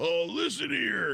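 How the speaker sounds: high, creaky, gravel-edged put-on voice. Showing the others an impression during a political chat: Mike Lindell impression. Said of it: "I can do a Mike Lindell".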